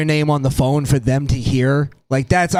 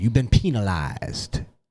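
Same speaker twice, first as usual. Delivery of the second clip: put-on preachy old teacher delivery; 4 semitones lower, 4 dB quieter than usual. Speaker doing his old teacher's catchphrase, imitating his old teacher. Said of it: "he would talk like he would talk like this".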